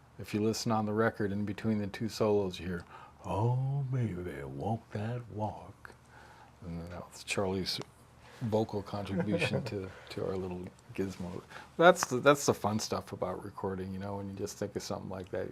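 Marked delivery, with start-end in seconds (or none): 3.3-5.9 put-on very slow, deep southern accent. Quoting Charlie's line heard on the record, imitating Charlie's Memphis drawl. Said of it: "in his deep southern Memphis drawl".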